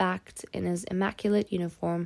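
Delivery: ordinary delivery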